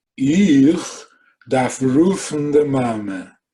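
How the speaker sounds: very slow, drawn-out, teasing, acted-out mocking repeat. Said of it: "what are you, mocking me?".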